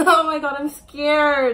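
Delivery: loud, frightened, nervous laughing squeal.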